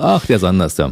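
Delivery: ordinary delivery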